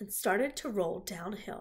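plain reading voice

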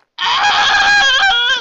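loud, high-pitched scream.

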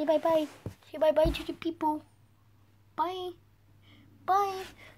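squeaky, high little dog voice. Voicing the pet dog's thoughts while it sniffs around: voicing the dog. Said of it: "He's looking at me like".

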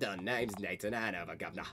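bad, terrible, put-on Cockney accent. Roleplay, introducing a self-insert character in a terrible Cockney accent. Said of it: "Please forgive me for my terrible Cockney accent".

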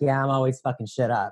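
normal talking voice

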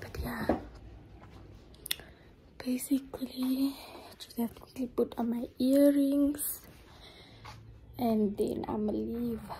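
hushed whisper. Speaking while everyone in the house is sleeping, whispering. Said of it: "the reason why I'm whispering".

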